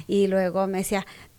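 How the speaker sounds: ordinary talk, nothing marked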